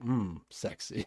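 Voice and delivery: dry, mocking, sarcastic tone. Recapping a show scene, retelling Emily's sarcastic reaction. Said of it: "sarcastically was like".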